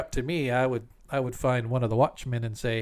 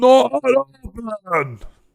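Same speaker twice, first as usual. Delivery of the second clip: very high, very loud, shrill giant voice shout; 11 semitones higher, 10 dB louder than usual. Narrating the giant pounding at a door that isn't open: Gruinab the giant yelling. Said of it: "he just sort of yells".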